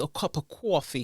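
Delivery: "coffee" pronounced with a New York accent. Talking about drinks, saying coffee in a new york accent. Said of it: "the best way to say coffee is in the New York accent".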